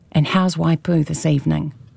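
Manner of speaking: ordinary talk, nothing marked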